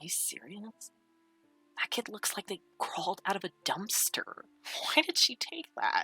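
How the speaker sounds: hushed, gossipy, confiding whisper. A group of friends whispering among themselves about the kid, quiet whisper. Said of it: "they're quietly whispering like".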